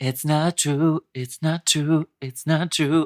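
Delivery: slow, deliberate, every phrase drawn out. Repeating the quoted line to Ellen: Dakota Johnson impression. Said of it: "I was quoting Dakota Johnson to Ellen saying".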